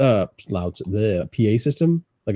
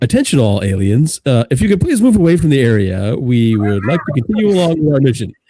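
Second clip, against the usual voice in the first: very loud, booming, loudspeaker-style announcer voice; 3 semitones higher, 8 dB louder than usual. Speaking to aliens outside the building over the microphone: public address announcement. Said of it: "grab the microphone and be all like".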